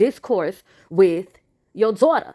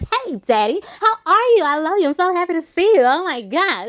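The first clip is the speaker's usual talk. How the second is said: mock bubbly, high, effusive gushing; 8 semitones higher than usual. Retelling a scene where Claire rushes over to greet her father: imitating Claire being bubbly. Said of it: "Claire immediately gets bubbly".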